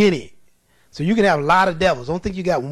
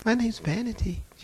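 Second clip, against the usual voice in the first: sweet, gentle, demure, pitched-up little voice; 5 semitones higher, 9 dB quieter than usual. Retelling what a demon answered when asked its name: imitating a sweet, demure voice. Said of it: "She sounded just as sweet and demure".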